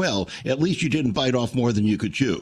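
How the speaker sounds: play-acted acerbic, biting, sharp-tongued tone. Retelling what a former professor said, imitating an acerbic remark. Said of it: "usual acerbic way".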